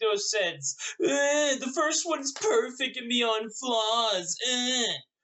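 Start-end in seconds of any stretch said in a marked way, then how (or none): 1.0-4.9 deliberately bad mocking voice, pitched up. The speaker mocks an opposing view, doing a bad mocking impression. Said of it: "I know that was a bad impression".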